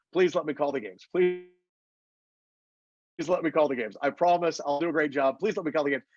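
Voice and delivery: ordinary talk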